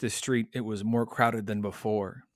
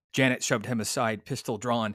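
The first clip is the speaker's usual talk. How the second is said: plain reading voice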